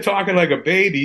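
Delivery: ordinary delivery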